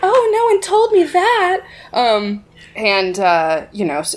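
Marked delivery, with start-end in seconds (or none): 0.0-1.6 very high, meek, fake-timid maiden act. Retelling a character's reply about court: imitating a timid maiden act. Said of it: "timid maiden act".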